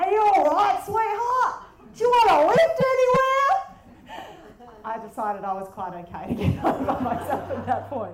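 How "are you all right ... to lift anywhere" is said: shrill, very loud, high-pitched yell. Retelling how a man leaned out of a window and yelled to her, imitating his yell. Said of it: "And he yells out".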